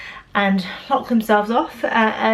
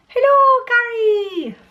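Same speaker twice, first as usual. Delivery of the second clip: very high-pitched, terrible put-on Irish accent; 13 semitones higher than usual. Opening a message with a greeting, in a terrible Irish accent. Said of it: "Terrible Irish accent".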